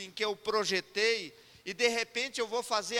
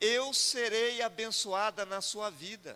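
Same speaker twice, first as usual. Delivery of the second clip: tearful voice, weeping through the words. Retelling what a woman said to him: imitating a woman crying.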